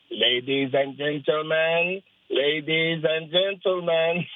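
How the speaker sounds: low, deep voice projected to a room. Describing a guy from a Christmas movie and how he sounds: Hans Gruber impression. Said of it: "He sounds like this".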